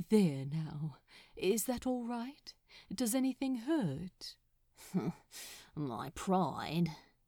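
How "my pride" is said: grumbling, lower pitch. Narrator reads a man answering his companion, who asked if he's hurt: grumbled. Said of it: "Crowley grumbled".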